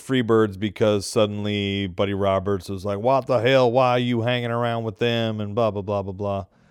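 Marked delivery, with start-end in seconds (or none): 3.0-5.4 put-on southern twang. Retelling what a wrestler shouted at his partner: imitating a southern twang. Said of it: "I give him a southern twang".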